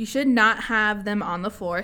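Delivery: plain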